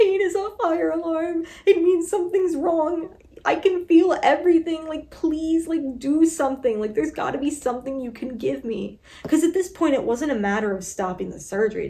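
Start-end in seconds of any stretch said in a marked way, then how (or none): 0.0-9.0 put-on tearful sobbing, raised and high-pitched. Retelling her words to the surgeon mid-procedure: imitating her own sobbing. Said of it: "sobbing, crying me".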